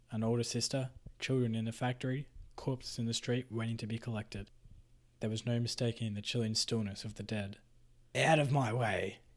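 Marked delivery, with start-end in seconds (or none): 8.1-9.2 very slow, contemptuous, scornful sneer. The foreman pushes a man aside, sneering. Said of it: "Traz sneered".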